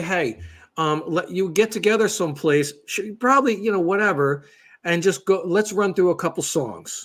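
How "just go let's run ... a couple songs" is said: ordinary talk, nothing marked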